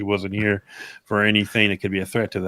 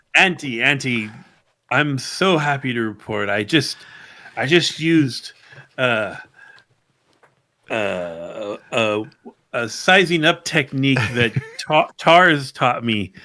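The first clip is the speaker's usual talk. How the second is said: fake, forced confident cheer, drawn-out uh; 4 semitones higher than usual. Player's character reports to Auntie with a fake confident smile. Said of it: "my best fake confident smile".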